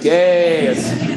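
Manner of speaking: happy, high, loud, drawn-out "yay" cheer. Coaching about tone of voice, demonstrate sounding happy with a happy cheer. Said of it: "I'm gonna be like".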